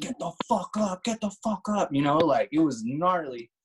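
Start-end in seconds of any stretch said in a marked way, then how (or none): 0.0-1.9 play-acted, high, furious screaming in angry cop voice. Retelling how the cops with guns drawn were yelling: imitating cops screaming. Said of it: "screaming at us".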